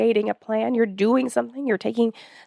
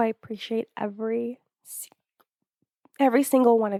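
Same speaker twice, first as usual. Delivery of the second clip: choked-up voice, close to tears. Thanking listeners at the end of a podcast, about to cry. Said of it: "I was about to cry".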